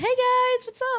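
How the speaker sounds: sweet, cute, very high, very loud voice. Retelling greeting the staff at Abenaki: imitating own cute smiley greeting. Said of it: "I put on a nice, cute little smile and say".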